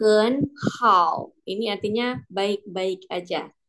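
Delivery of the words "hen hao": rising second tone on hen, dipping third tone on hao. Mandarin lesson in indonesian on tone change: rising hen, dipping hao. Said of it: "ketemu lagi nada dua dan nada tiga".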